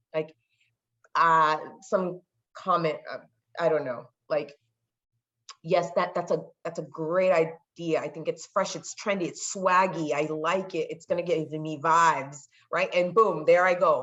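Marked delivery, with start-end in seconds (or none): none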